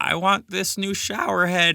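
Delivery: strange, affected, soft, high put-on voice. Reading a wish-list tweet aloud in an odd put-on voice. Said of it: "I don't know why they sound like that".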